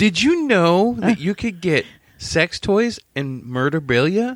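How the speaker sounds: commercial ad-read voice. Imitating the other speaker as if doing an ad read: imitating an ad read. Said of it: "that almost sounded like you were doing a read".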